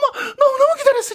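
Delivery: overjoyed tearful gushing.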